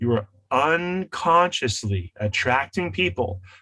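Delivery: very slow, deliberate, word-by-word delivery. Speaker stressing a point to listeners, saying it very slowly. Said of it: "let me say this very slowly".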